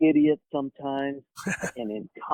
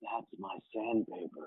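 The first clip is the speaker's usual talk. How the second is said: mock very reverent, hushed near-whisper; 8 semitones lower, 14 dB quieter than usual. Retelling a man's reply about his scroll, imitating his reverential tone. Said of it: "in this very reverential tone".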